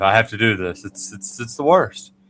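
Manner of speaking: wry, overplayed weariness, put-on dread, slightly sarcastic. Retelling own morning thought about the dull preseason: slightly sarcastic, put-on dread. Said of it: "I'm being slightly sarcastic".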